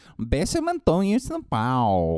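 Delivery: put-on loud, swooping Portuguese accent. Guessing the woman in the story is Gisele, Gisele Portuguese impression. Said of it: "that's my Portuguese impression".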